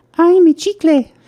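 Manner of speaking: put-on high, childlike girl voice. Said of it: "she goes".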